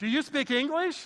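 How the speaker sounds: very loud, very high-pitched yell. Retelling a student in your group repeating a question to a local, imitating saying it louder. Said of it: "And then he'd say it louder".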